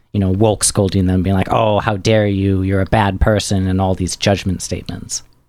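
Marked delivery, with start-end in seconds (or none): none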